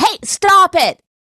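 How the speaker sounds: loud aggressive outburst, very high. Showing what an aggressive yell would sound like: mock aggressive yell. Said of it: "that's so aggressive to be like".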